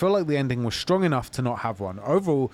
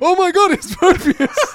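very high, loud, shrill fake shock; 10 dB louder than usual. Reading a viewer comment aloud as directed: mock shock.

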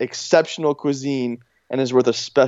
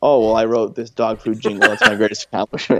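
put-on awkward flat monotone voice, lower; 3 semitones lower than usual. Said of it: "everything he says is so flat".

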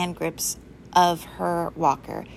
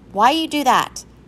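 high-pitched, loud outcry of protest, voice raised; 6 semitones higher, 6 dB louder than usual. A girl whose chair has just been slid to the wall, crying out in protest. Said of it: "Claire cried out in protest".

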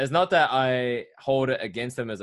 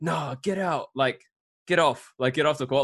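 put-on, insistent, mild half-yelled scolding tone; 4 semitones higher than usual. Speaker recounts a teammate yelling at them when being subbed out; retelling a yell. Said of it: "he like yelled at me".

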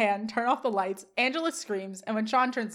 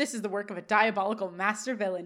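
ordinary talk, nothing marked

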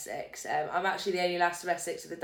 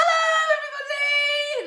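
very high-pitched, loud, put-on stage voice; 6 dB louder than usual. A comedian recalls how they used to open sets, own old high-pitched voice. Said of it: "I used to speak really high pitched".

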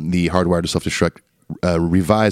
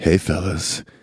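over-the-top, exaggerated sultry, sexy voice; 3 dB quieter than usual. Deciding to do an extra sexy voice for a line: extra sexy voice. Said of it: "I should do an extra sexy voice".

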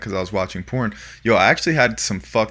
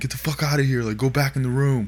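mock yell, high and mild; 5 semitones higher than usual. Retelling how the guy yelled at them to leave: retelling a yell. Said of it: "the guy would like yell at us".

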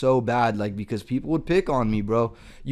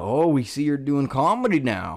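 bad, poorly attempted put-on Southern twang; 2 semitones higher than usual. Speaker retelling what family members said about his comedy, in a stupid attempted southern accent. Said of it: "doing this stupid, like, Southern attempted accent".

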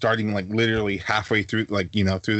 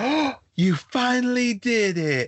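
high-pitched, slow, drawn-out grandma voice. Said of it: "She's like".

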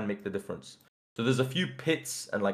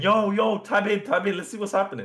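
mock anxious, nervous, pitched-up shouting; 10 semitones higher, 5 dB louder than usual. Describing teammates who are not paying attention, the speaker is retelling own nervous screaming. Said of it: "I get nervous and I start screaming".

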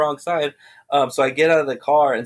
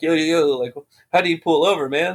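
put-on full panic, sounding at a loss; 2 semitones higher than usual. Retelling being pulled over, quoting own past words: imitating own panic. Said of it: "probably, like, panicking".

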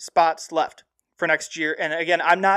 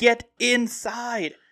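urging yell, voice raised in pitch; 6 semitones higher than usual. Retelling watching a Loyola game, acting out yelling at the TV. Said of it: "I'm sitting there yelling at my TV going".

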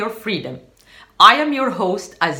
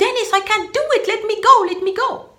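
mock terrified cry, very high pitch; 12 semitones higher than usual. Retelling freezing on a mountaintop and calling out for help: retelling a frightened shout. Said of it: "And I was shouting".

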